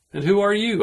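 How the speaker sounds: very high, quick, snappy delivery. The narrator answers the boy who told him to learn manners: shooting back a retort. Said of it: "I shot back".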